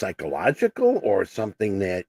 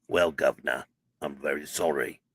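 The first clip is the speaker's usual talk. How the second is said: bad fake British accent, very deep and low; 7 semitones lower, 7 dB quieter than usual. Replying to a viewer offended by the accent, in a bad British accent. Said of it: "he's offended by my bad British accent".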